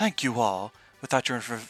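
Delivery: ordinary delivery, nothing marked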